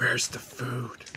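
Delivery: hushed, whispered voice of a lurking creature. The players feel a presence on their necks and hear it ask: whispering creature voice. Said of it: "you hear its whisper like".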